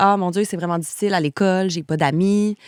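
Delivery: ordinary talk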